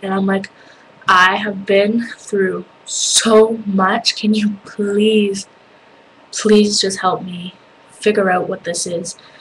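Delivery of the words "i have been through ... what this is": re-enacted sobbing bawling, slower. Retelling pleading with two doctors from a bedside, retelling a bawling plea. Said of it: "I was just bawling and bawling".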